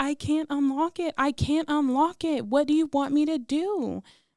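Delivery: high-pitched pleading, crying through tears. Retelling a partner screaming to unlock the door: imitating her own crying plea. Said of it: "And I'm crying".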